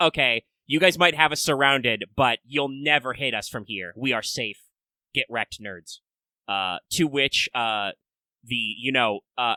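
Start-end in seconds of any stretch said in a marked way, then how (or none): none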